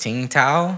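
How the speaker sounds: questioning rise in pitch at the end of Tao. Recalling own unsure pronunciation, rising question tone on tao. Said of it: "you have that question tone ... that whole inflection at the end".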